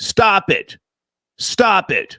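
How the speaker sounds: shouting. Telling another speaker to stop smoking on screen: yelling. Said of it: "Why are you yelling".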